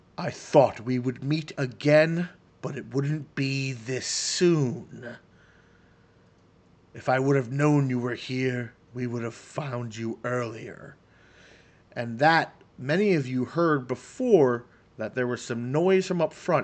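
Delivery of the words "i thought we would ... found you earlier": dual voice, as if two people speak together. Voicing the risen were-rat plague master speaking to the players: dual voice. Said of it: "in kind of a dual voice".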